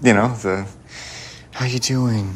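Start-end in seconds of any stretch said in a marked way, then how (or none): 1.5-2.3 overly sorry, pity-laden, sympathetic concern. Showing a friend how other people talk to her, put-on pity voice. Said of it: "the pity voice".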